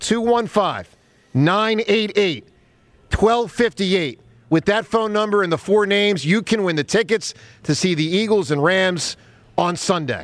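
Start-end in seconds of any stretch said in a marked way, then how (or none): 0.0-4.2 said slowly and deliberately. Announcer repeats the contest line number for callers, slowly. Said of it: "I'll say it slow".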